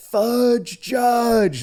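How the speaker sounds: high, shrieked at the top of the lungs. Retelling how a college buddy quoted a movie line: imitating a friend screaming. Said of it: "he would scream it at the top of his lungs".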